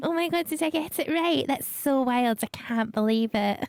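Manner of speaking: fake, put-on ladylike voice. Reacting to getting an email address right: put-on lady voice. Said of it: "That's my lady voice".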